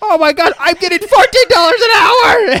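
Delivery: high, loud ecstatic squeal.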